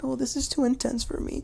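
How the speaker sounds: put-on upset, soft, high voice close to tears. Recapping a restaurant fight, voicing a woman asked if she's okay, imitating someone in tears. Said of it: "Poor Nia is now in tears".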